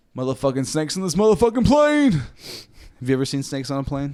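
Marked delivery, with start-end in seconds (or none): 0.1-2.1 high, swooping shout, pitch swinging widely. Quoting a line from a movie, imitating Samuel L. Jackson shouting. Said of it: "something that Samuel L. Jackson would say".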